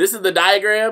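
high-pitched, loud, lecturing goody-goody know-it-all voice.

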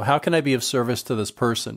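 ordinary talk

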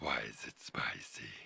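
low whisper with laughter.

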